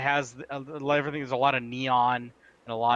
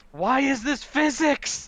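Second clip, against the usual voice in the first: high, slow, loud scream of frustration. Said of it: "you'd be screaming".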